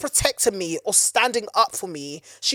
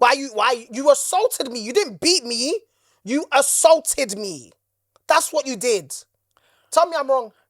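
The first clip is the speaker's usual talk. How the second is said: worked-up, agitated, accusing, pitched-up insistent tone; 5 semitones higher, 3 dB louder than usual. Acting out confronting a parent over assault: agitated, worked up. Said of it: "Calm down".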